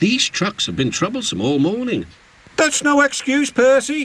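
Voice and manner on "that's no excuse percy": snorting, much higher, slower. James scolds Percy for being late; snorted. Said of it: "snorted James".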